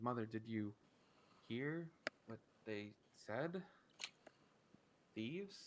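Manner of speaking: hushed voice, not quite quiet enough. Voicing a daughter asking her mother, trying to speak quietly. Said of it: "she tries to speak quietly".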